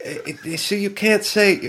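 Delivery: fake English accent, drawn out and high. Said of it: "she was like".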